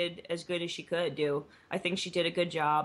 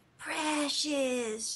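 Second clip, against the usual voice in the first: lurking creature voice, pitched up; 9 semitones higher than usual. Comparing a lurking organisation to Gollum: Gollum voice. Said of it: "lurking in the shadows like Gollum from Lord of the Rings".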